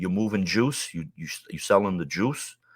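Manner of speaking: low, hushed half-whisper, close in the ear. Recounting a man at the gym leaning in to his ear: retelling a half-whisper. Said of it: "and he whispers in my ear".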